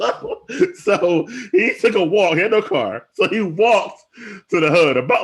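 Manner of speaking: high, loud laughing delivery.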